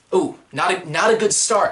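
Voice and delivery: ordinary talk, nothing marked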